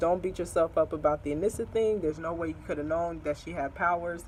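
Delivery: normal talking voice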